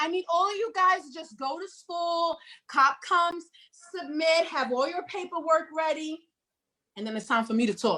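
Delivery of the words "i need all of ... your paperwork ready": high, put-on, overcautious caricature voice. Mocking people who tell kids to submit to cops, doing the voice. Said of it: "but I'm doing the voice".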